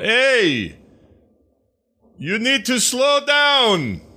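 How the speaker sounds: very high, loud shout with "hey" drawn out. Calling out to a running figure across a field: in-character yell. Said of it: "I would yell".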